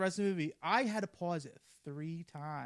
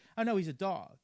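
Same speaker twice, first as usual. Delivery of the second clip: plain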